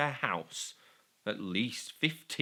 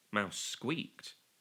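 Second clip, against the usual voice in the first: ordinary delivery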